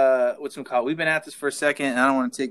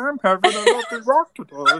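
squeaky, very high, silly put-on dog voice; 10 semitones higher, 3 dB louder than usual. Imagining someone typing a message while using their dog voice: put-on dog voice. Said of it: "then they use their like dog voice while they do it".

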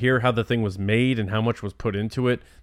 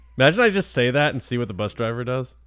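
ordinary talk, nothing marked

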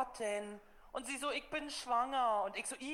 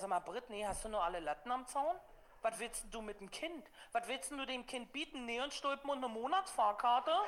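plain

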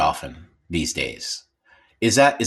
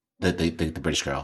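plain

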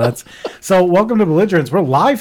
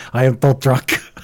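put-on Russian accent; 3 semitones lower than usual. Recalling the Russian tow truck in Cars 2, the speaker imitates it. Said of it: "it was the Russian tow truck".

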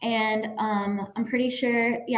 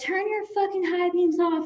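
higher-pitched mock yelling; 8 semitones higher than usual. Retelling telling off a driver through the car window: retelling a yell. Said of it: "I yelled at the guy".

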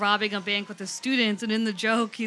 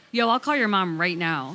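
playful, mock-stern, put-on threatening tone; 3 semitones lower than usual. Speaker retells what they'd say to a misbehaving kid, mock-threatening. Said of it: "sometimes I'd be like".

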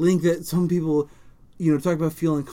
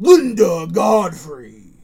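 put-on monster truck announcer voice, louder; 8 dB louder than usual. Reading a line aloud for a talking toy: monster truck announcer voice. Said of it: "I wanna do that in Monster Truck voice".

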